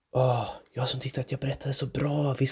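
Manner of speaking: whispering with irritation and annoyance. As her listeners fall asleep, she whispers to her husband in an irritated whisper. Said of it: "viskade hon irriterat".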